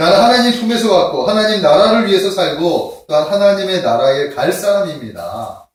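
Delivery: bold, confident, loud tone.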